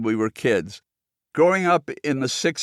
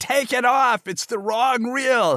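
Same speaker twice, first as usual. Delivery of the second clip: mock, very high, all-out screaming; 10 semitones higher than usual. Retelling bursting into the projection booth: imitating own past scream. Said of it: "screamed at the guy".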